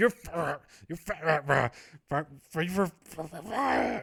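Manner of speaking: slow, furious, stuck stammer, words not coming out. Retelling a boss so angry he cannot get the words out: imitating someone too angry to speak. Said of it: "so angry that he can't, he can't get the words out".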